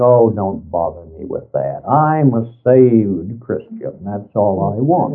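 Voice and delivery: mock contemptuous, dismissive sneer. Quoting people who couldn't care less: mock sneering tone. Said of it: "a sneering".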